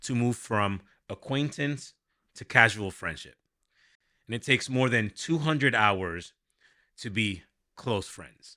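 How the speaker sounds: normal talking voice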